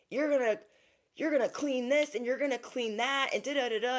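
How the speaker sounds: put-on yelling. Retelling a movie scene where a wife yells at her husband: imitating someone yelling. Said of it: "she's, like, yelling at him".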